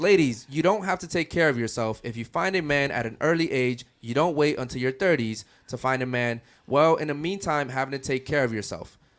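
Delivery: ordinary delivery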